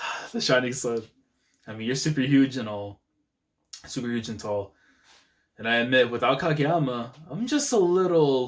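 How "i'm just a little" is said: the word little stressed, slowed and higher. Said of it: "emphasis on the little".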